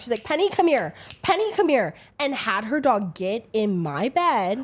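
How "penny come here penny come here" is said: sharp, pitched-up snap. Retelling how she called her dog over: imitating someone snapping at a dog. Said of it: "she snapped at her dog".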